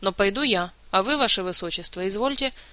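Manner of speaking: ordinary delivery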